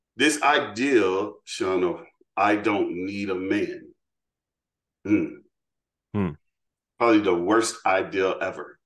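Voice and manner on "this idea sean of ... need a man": very slow, deliberate, drawn-out delivery. Speaker spelling out a point to Sean, said really slowly. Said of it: "I'm gonna say this really slow".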